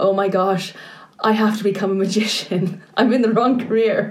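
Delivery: mock crying while talking. Retelling crying on the couch for hours with the Olympics on TV, imitating crying. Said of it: "I cried on the couch for hours, going".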